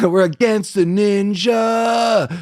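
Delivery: high, slow mock dramatic shout.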